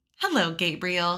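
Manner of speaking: lilting, sing-song tone of voice. Reading a story aloud, a girl greeting a sleeping baby: sing-song voice. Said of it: "she said in a sing-song voice".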